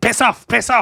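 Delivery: very high, shrill shouting outburst. Describing a scene where a character starts shouting, imitating someone shouting. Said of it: "and then starts shouting".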